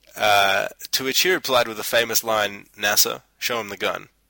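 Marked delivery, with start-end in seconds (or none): 2.8-4.0 put-on deadpan delivery. Recalling someone's famous reply that had everyone laughing: retelling a deadpan line.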